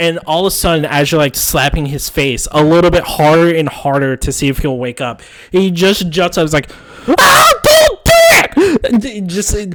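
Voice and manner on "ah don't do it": nasally pained scream, higher and louder. Voicing a character jolted awake by face slaps: nasal scream of pain. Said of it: "this very nasally person screams in pain".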